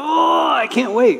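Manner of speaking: slow, eager groan. Explaining groans of anticipation, the speaker demonstrates: eager groan. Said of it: "There's a bit of groaning".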